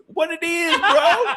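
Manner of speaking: very high, put-on Indian-accented pimp voice. Retelling a friend's bit that cracked him up, Indian pimp voice. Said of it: "He does the Indian pimp".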